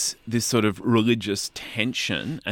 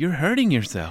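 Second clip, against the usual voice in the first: put-on American accent, higher pitch; 5 semitones higher than usual. Telling a story's author how they voiced Kick, American-accented Kick voice. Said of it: "That was you the way you did Kick there".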